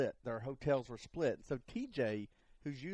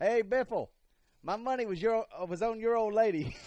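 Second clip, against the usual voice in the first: put-on old rural man voice, much higher, louder, slower; 9 semitones higher, 8 dB louder than usual. Retell what Tony Gibson called to Greg Biffle walking by at lunch, imitating old redneck Tony Gibson. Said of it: "he's that old redneck guy. And he's like".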